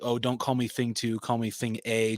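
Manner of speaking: ordinary talk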